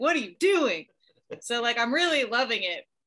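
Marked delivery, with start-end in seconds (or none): 0.0-0.9 put-on yelling, pitched higher. Retelling yelling at the tv during the show: imitating yelling at the tv. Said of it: "I am also yelling at the T V".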